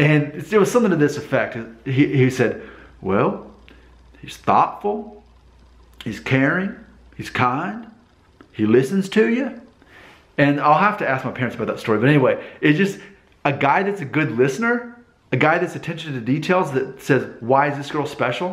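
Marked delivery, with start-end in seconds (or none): 3.0-9.6 teasing put-on country accent, slow and drawling. Retelling what their dad said, mimicking his answer: mocking country accent. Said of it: "like in this country accent".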